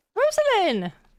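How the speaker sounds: emphatic exclamation, high and loud.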